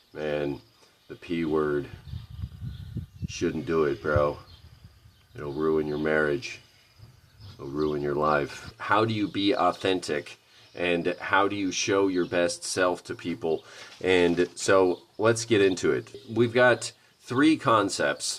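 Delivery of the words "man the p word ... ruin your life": low, flat, deadpan bro monotone. Picturing himself in his pickup truck talking to his bro, speaking monotone. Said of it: "I'm just talking monotone".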